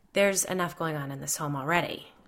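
ordinary delivery, nothing marked

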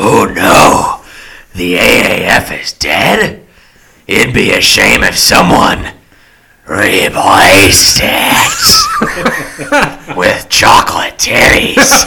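loud wrestling-promoter style delivery with big pitch swoops. Reading a meme aloud as asked: Vince McMahon voice. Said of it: "get your Vince McMahon voice ready".

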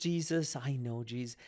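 put-on conversational Dutch-accented speech. Retelling a story of Corrie ten Boom praying and giggling: Corrie ten Boom's broken Dutch accent. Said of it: "She has broken Dutch accent".

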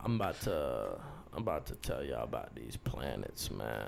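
very quiet, raspy mumble, barely above a murmur. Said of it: "his voice is, like, super raspy".

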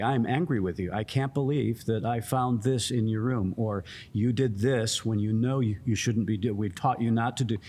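plain

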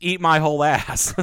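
high, loud, laughing mock voice.

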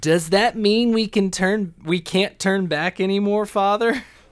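put-on cute voice. Recapping a show, quoting a voice from inside a barrel: cutest voice ever. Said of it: "In the most cute voice ever".

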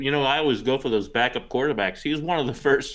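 talking with mouth full. Speaker discussing fantasy backup quarterbacks while eating a pretzel, talking while eating. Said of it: "Sorry, I'm eating a pretzel".

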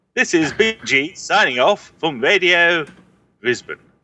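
put-on 1950s old-time newsreel voiceover announcer voice. Signing off as if from a radio station: 1950s voiceover guy voice. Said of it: "he sounds like a 50s voiceover guy".

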